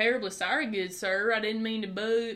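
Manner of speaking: put-on southern Texan accent. Showing how to read a gentleman character's dialogue in a southern accent. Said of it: "read it with a southern accent".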